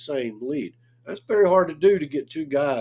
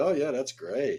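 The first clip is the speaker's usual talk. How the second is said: play-acted unconvinced, slow, sarcastic, fake approving tone; 4 dB quieter than usual. Imitating what a tough listener usually says: imitating sarcastic praise. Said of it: "I thought he was being sarcastic".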